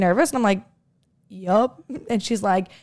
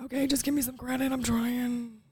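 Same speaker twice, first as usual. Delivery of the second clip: put-on hushed, soft voice sounding like an old smoker; 4 semitones higher, 9 dB quieter than usual. Asking the other speaker for some credit, sounding like an old smoker. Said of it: "Why did you sound like a 50 year old smoker right there?".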